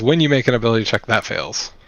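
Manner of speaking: ordinary talk, nothing marked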